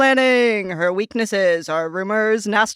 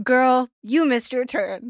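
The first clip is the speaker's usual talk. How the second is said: sweet, condescending sat-nav voice. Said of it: "you could have [name], um, do your directions".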